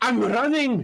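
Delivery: very high-pitched character voice. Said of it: "the voice of Scotty".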